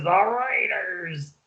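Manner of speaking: gargly put-on voice with pitch pushed up. Showing how to announce a team pick: deep gargly Chris Berman voice. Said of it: "You gotta do a deep, gargly voice".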